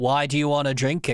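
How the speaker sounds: imitated flat, uninterested tone. Retelling a ghost show clip, imitating Zach's monotone voice. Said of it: "such a very monotone vo-".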